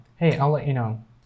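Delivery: ordinary talk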